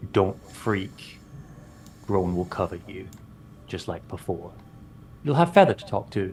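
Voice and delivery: soft, hushed, reassuring half-whisper. Playing a character who walks up to Marisol, who can't see, half-whispering.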